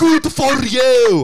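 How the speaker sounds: put-on heavy Scottish accent, loud and high. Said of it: "That's what he sounds like".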